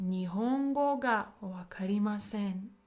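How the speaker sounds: usual speaking voice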